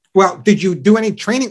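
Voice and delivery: plain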